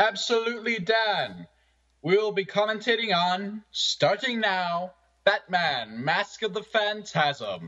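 very high broadcast-announcer voice. Asked by a fellow commentator to introduce the movie: announcer voice. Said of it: "in your announcer voice".

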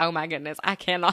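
normal talking voice

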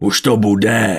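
loud, enraged, furious hissing voice. Narrator reads a character's line as the group waits by the roasting boar: furious hiss. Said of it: "zasyčel stekle Venátor".

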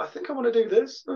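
rising, unsure, questioning tune on "this". Acting out one's usual unsure self, with a rising inflection on 'this'. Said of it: "Upward inflection, I'm not really sure".

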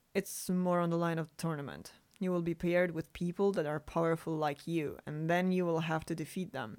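ordinary delivery

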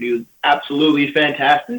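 loud delivery with voice cracking mid-sentence. Describing an athlete seen in training camp, voice cracking. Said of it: "voice crack".

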